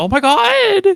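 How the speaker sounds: put-on very high drunk party girl voice, god stretched.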